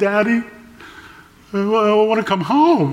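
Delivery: high, trembling, wavering voice. A father retells his daughter's phone call home: imitating a quivering voice. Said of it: "her voice is quivering".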